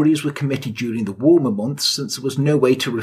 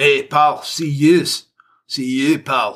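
put-on Glaswegian street speech, local Glasgow accent. Describing how people in Glasgow talk, the speaker does a Glasgow accent impression. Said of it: "that's what they speak like in Glasgow".

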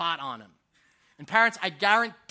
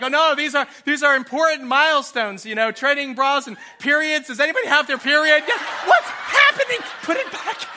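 mock flustered, nervous rambling, high and rising; 6 semitones higher, 7 dB louder than usual. Retelling own rushed words on the drive home: imitating own nervous rambling. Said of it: "And now I'm nervous".

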